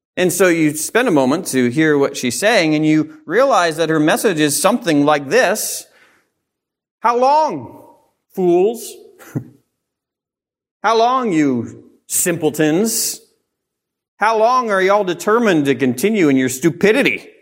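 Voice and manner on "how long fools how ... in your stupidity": put-on scathing, pitched-up, drawn-out delivery. Speaker voices the message a woman is loudly calling out: retelling a loud scathing call. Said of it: "very direct and loud and even scathing".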